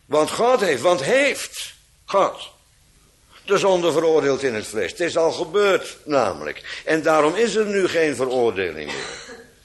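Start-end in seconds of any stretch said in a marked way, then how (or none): 0.3-2.5 stress falls on "God heeft". Explaining where the emphasis belongs in the sentence, stress on 'god heeft'. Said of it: "Daar moet de klemtoon op liggen".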